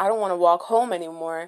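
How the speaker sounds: usual speaking voice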